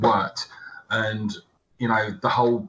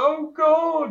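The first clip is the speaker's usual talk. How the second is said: put-on, very high, whiny whimpering cry; 5 dB louder than usual. Retelling a character dragged off by the zombie queen, mock crying. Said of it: "crying like a little bitch".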